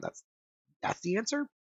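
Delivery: rising, question-like tone on answer. Answering another speaker, unsure, with question-like rising inflection. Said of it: "That's the answer with a question mark".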